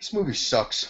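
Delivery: plain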